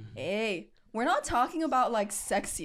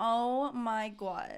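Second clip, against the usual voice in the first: mock New Jersey girl accent. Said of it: "like how the girls talk though".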